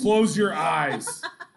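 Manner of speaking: loud, slow, forceful voice. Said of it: "Sarah gets very forceful about this".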